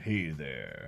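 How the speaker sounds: retro seventies announcer, very low, deep and soft. Trying out a suggested voiceover idea, in a seventies voiceover voice. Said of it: "make it all seventies as a voiceover".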